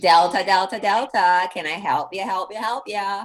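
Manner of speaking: put-on dumb party-girl sorority voice. Recalling sorority rush, quoting one sorority's motto in a sorority girl voice. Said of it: "I have a sorority girl voice".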